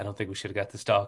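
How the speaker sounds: murmured, hushed, confiding stage whisper. Retelling what she said two weeks before the dog came: retelling a half-whisper. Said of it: "she says to me in a whisper".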